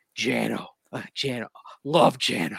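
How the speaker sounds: soft, husky, breathless murmur. Recalling someone clearly taken in by Jano, breathless Brock Olivo impression. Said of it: "that little huskiness in your voice and the little bit of that breathless quality".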